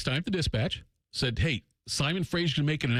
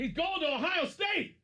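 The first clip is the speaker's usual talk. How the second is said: put-on yelled Southern drawl, pitched higher; 4 dB quieter than usual. Retelling how the coach announced a recruit: imitating Daryl Maine yelling in a Southern drawl. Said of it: "he yells that in his Tim May drawl".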